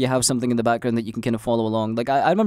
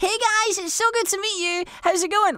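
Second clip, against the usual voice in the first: very high-pitched, squeaky, squirrel-like voice. Streamer imitating how they sounded in old clips: high squeaky voice. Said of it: "I legit sound like a squirrel".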